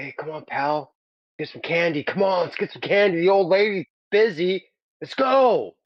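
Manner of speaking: put-on eager, high-pitched child voice. Acting out the kid being held who wants candy: imitating the kid wanting candy. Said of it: "looking at you like".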